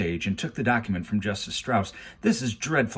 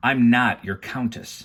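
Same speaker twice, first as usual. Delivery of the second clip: extremely annoyed, testy, raised voice; 2 semitones higher, 5 dB louder than usual. Reading a story aloud, a girl denying a marriage: testily, extremely annoyed tone. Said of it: "Violet said testily".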